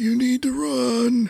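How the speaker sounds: raspy, very high voice, held drawn-out run. Put on the spot to throw a line, the speaker does a raspy Stephen Lang voice. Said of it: "his raspy voice that he did—you did it really well. Go ahead, throw a line".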